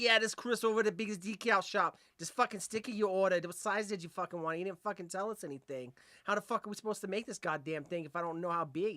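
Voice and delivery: put-on New York accent. Retelling a work phone call taken while the boss did accents, New York accent. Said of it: "we were doing like New York accents".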